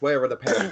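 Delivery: normal talking voice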